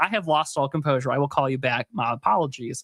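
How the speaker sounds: ordinary delivery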